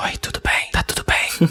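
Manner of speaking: whispered, drawn-out, slow and breathy. Imitating a woman who whispers everything, even at a party: whispered. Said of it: "ela fala tudo sussurrando ... ela falando assim".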